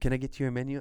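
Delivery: put-on French-accented speech. Speaker retells a cafe waitress offering a menu, in a French accent. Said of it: "They have their accent".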